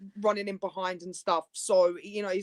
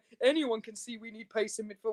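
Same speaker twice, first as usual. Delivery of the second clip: talking with words broken up by laughter; 2 semitones higher, 5 dB quieter than usual. Retelling what a club board member said while laughing: imitating Lady Brady laughing while talking.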